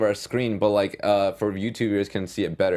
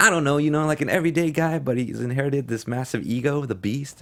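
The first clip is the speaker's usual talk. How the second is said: folksy, aw-shucks everyday American accent, pitched up; 5 semitones higher than usual. Reading a quote aloud that switches into an aw shucks american accent. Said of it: "it switches to an aw shucks American accent".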